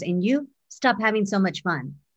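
plain

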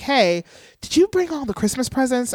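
high-pitched whisper. Speaker retells asking her husband about presents with their daughter nearby, retelling a whisper. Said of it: "I'm whispering like".

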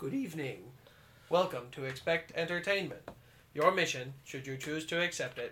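strange, weird, put-on robot voice. A host opening the podcast, weird robot voice. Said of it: "talking in a weird robot voice".

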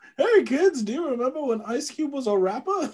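put-on old man voice. Joking after the other speaker says they sound like an old man: put-on old man voice. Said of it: "I sound like an old man".

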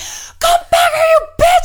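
piercing high scream at the top of lungs. Retelling chasing a thief through a courtyard: imitating own screaming. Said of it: "and I was screaming".

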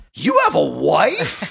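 loud, incredulous, "wife" stretched. Speaker retells the man's second reply to him, way more mock-incredulous. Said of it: "Way more incredulous".

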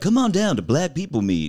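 put-on jazzy radio-ad announcer voice, swooping pitch.

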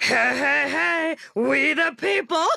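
very high, rough cartoon voice. Imitating a character teaching the Declaration of Independence: Fat Albert voice. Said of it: "teaches the Declaration of Independence in Fat Albert voice".

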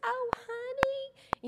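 put-on very high-pitched southern accent. Recalling a phone call to a sweet older lady in Texas, Miss Rosie's southern voice. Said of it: "so Debbie could hear her southern voice".

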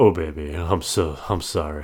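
imitated deep-voiced delivery, low and smooth. Imitating the low-voiced guy those groups always have: low smooth voice. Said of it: "those groups have a guy with a low voice. And it's always like".

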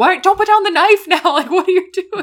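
shrill, booming, very loud, high-pitched frustrated yell. Retelling how they yelled at the tv during the movie: retelling yelling at the tv. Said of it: "I spent a lot of this movie just yelling at my T V".

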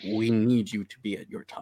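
whispering in a put-on voice. Nudging a companion and shaking a coin purse, whispering in character. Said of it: "kinda whisper to him".

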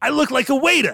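put-on slight New York accent, very high pitch. Quoting a line the character Ryan says: imitating Ryan's slight New York accent. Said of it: "He puts on, like, a, a slight New York accent".

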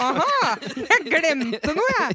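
exaggerated mock realization, high and slow aha.

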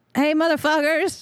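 high, rallying yell. In a game, a player's character yells at them, yelling. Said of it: "I'm going to yell at them".

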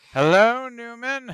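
very loud, high-pitched belted delivery. Showing how Seinfeld talks: Jerry Seinfeld impression. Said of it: "I know he talks like this".

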